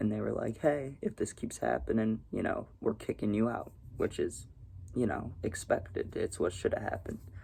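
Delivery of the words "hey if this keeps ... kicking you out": normal talking voice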